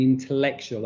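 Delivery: stress on the word "intellectual". Presenting slides to an audience: stress on INTELLECTUAL. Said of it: "I'm stressing the word intellectual".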